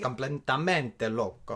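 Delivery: put-on Spanish with Italian accent. Greeting everybody in a video: Spanish with an Italian accent. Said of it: "Je parle espagnol avec un accent d'italien".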